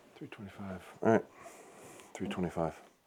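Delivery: very soft, hushed, near-whisper voice. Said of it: "I'm gonna be quiet for the next three arrows or just whisper".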